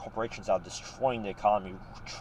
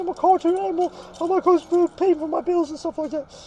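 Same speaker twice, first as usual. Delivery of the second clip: put-on crying, much higher; 7 dB louder than usual. Retelling being laughed at by employers, imitating own crying. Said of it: "I'm crying".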